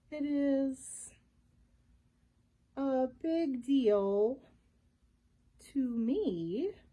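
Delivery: very slow, plodding, drawn-out delivery. The slow voice answers the narrator's question about the mystery, in a very slow voice. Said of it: "said the slow voice".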